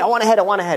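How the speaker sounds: mild, contained yell at half strength. Storyteller quoting a guru calling out to a crowd: retelling a scream. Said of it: "And he's screaming".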